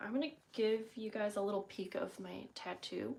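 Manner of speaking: quiet whisper. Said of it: "I whispered it".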